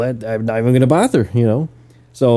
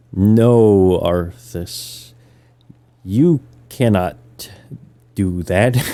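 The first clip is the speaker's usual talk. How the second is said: dragged-out, slow-motion, drawn-out delivery; 3 semitones lower than usual. Mocking how a game's cutscene characters talk, in slow-motion cutscene talk. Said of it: "You'll notice they talk like this".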